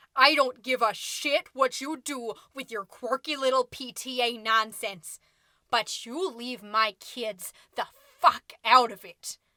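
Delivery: hissing, growling, snarling. Reading a story where a furious mother confronts the narrator: hissing, growling. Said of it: "she hisses, she growls".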